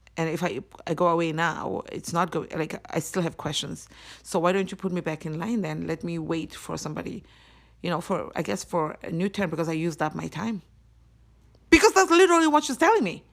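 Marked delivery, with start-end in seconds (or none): none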